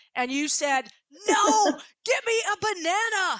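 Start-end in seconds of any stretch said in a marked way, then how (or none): 1.3-3.4 mock angry, very slow, drawn-out, raised pitch. Recalling to Montana what he said during a game, retelling an angry outburst. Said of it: "because you were so mad".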